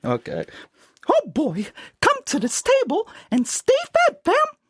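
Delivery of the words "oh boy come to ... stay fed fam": squeaky, very high, swooping cartoon voice. Asked to say their ending tagline in the Mickey Mouse voice, the speaker does a Mickey Mouse voice. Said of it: "In the Mickey Mouse voice".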